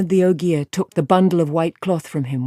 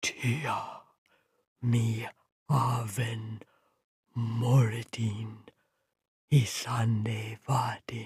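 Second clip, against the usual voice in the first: hushed, awed half-whisper, barely audible; 5 semitones lower, 12 dB quieter than usual. The Ogier, reading the old script on the horn, speaks: half-whispered. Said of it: "he whispered".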